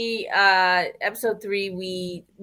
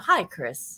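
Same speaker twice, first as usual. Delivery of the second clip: quieter, smooth put-on voice; 4 dB quieter than usual. Recalling a film line to the others: smooth Eric Bana voice. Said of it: "That real smooth "Hi, Chris."".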